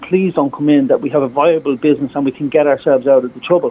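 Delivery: ordinary talk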